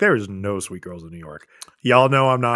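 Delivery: ordinary talk, nothing marked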